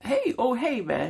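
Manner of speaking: acted, very high, drawn-out, suddenly warm friendly voice. Retelling the angry man turning suddenly friendly: imitating a sudden friendly tone. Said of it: "He was really nice to me after that".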